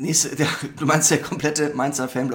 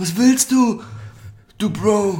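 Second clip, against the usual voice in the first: high, loud, very slow, stretched-out delivery; 8 semitones higher, 6 dB louder than usual. Improvised parody during a chat, Klaus Kinski impression. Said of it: "ich mache jetzt Kinski".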